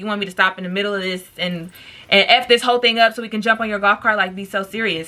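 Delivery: ordinary talk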